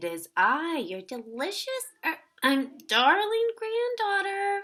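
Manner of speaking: fake, disguised, very high, rising sweet-talk voice. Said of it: "said the wolf in a high voice".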